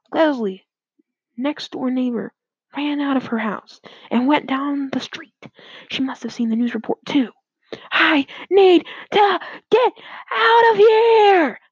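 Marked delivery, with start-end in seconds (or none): 7.9-11.5 very high, very slow, drawn-out yell. Narrator voices the next-door neighbor as she runs out of her house: yelling. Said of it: "yelled Leslie".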